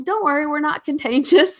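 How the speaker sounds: put-on sarcastic tone. Retelling own reply to the PTO president: retelling own sarcastic reply. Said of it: "me being the sarcastic".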